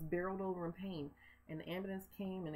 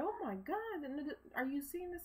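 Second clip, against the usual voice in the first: mock very high, piercing, shrill shriek; 9 semitones higher than usual. Retelling seeing a parking structure collapse from a hospital bed: imitating own screaming. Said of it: "And I'm screaming".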